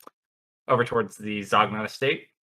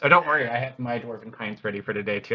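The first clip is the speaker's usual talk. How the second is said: usual speaking voice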